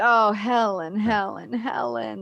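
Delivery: acted, very slow, sorrowful, drawn-out call. Retelling a film scene where he calls out to his missing wife: imitating sad calling out. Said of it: "he very sadly says".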